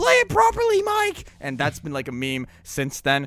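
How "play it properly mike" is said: mock, very high, shrill yelling. Retelling recording vocals after a botched band take, reenacting a shout. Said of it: "I just shouted".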